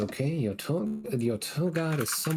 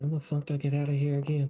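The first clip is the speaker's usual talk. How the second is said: muttering quietly under breath. Voicing a character walking through a forest: muttering quietly under his breath. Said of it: "just quietly under his breath going".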